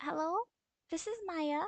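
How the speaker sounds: put-on voice for a female character. Voicing Maya answering a phone call: Maya character voice. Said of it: "I don't remember what voice I gave her".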